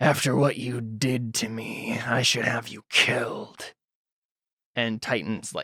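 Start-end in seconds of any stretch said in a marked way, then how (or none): 0.0-3.6 raspy, quiet voice. Narrator voices Cyrillus on his throne, addressing the beaten Titan: raspy Cyrillus voice. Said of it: "I forgot Cyrillus has a raspy voice now".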